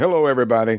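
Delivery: divine announcer voice, as from the heavens. Recounting hosting a game show while hidden away, heard from high above: voice of God. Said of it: "doing the voice of God".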